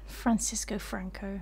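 soft, unvoiced whisper.

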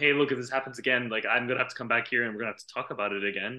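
ordinary delivery

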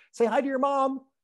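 very high-pitched, jittery, nervous little voice. Retelling what a woman from an aqua aerobics class said, imitating a high-pitched nervous voice. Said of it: "In this really high-pitched kind of nervous voice".

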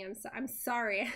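insincere, not sounding sorry at all. Reading an apology line aloud in a game conversation: not sounding sorry. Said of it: "I don't sound very sorry".

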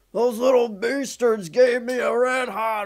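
very high-pitched, shrill, complaining holler. Speaker retells what someone yelled after eating a Red Hot: retelling a yell. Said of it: "Andy yelled".

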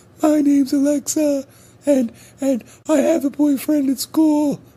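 very high, slow, teasing put-on little girl voice. A father teasing his daughters by imitating them in a put-on girl voice. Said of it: "I tease them all the time in their girl voices".

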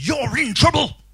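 spooky, threatening, loud, high, menacing delivery. Demonstrating the effect of an exclamation mark with an example, scary. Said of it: "It's supposed to be scary".

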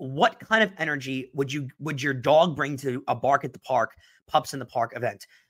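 usual speaking voice

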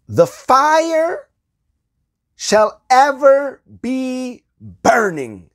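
high, loud, ringing proclamation cried out.

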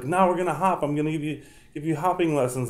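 voice going up into a weird high pitch. Retelling dressing as the Easter Bunny for preschool kids: imitating own weird high voice. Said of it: "I talked in this weird high voice".

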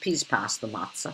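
put-on old-fashioned London accent.

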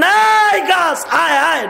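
slow, high calling-out voice.

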